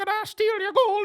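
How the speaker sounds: high-pitched leprechaun voice. Trying again after being told the leprechaun impression needs a higher pitch: high-pitched leprechaun voice. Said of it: "need a definitely a little higher pitch".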